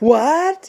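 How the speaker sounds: pitch rises at the end of what. Explaining a rising sound like asking a question: rising pitch on 'what'. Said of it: "a rising sound, like our inflection when we ask a question".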